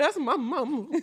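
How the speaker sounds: shaking, trembling voice. Imitating how Candy cried when mad: imitating Candy's shaking voice. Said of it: "Her voice starts shaking".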